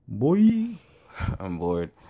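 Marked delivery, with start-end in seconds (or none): 0.1-0.7 put-on Jamaican accent, mock preacher tone. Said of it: "my fake Jamaican accent".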